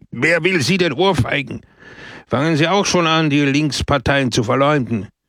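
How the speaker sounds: exasperated, losing all patience. A man loses all patience with another who asked why he'd be slapped, out of patience. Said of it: "Peppone verlor gänzlich die Geduld".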